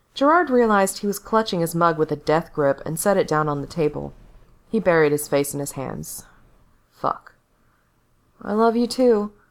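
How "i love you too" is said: pitched-up, indistinct, half-swallowed mumble. Narrator voicing Gerard answering as the front door closes, mumbled. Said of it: "he mumbled".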